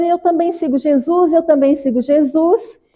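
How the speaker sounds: high, eager, fervent excited shout. Retelling a book scene where an eager young man arrives: imitating a young man shouting. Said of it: "E chega lá gritando".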